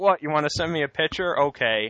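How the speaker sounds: high, fast, humoring tone. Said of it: "and he's like".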